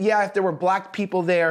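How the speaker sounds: plain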